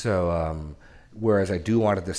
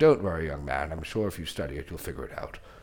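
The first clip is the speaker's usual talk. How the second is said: mock smug, condescending tone, lower; 2 semitones lower than usual. Speaker acts out what a man who argued with him smugly said: mock-smug condescending. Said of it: "what he smugly says is".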